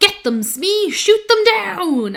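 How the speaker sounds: angry delivery, pitched slightly high. Describing the original Disneyland ride ending, quoting the villain: mock-angry Captain Hook voice. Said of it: "it's a really angry voice".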